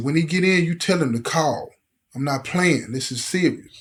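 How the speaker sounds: ordinary talk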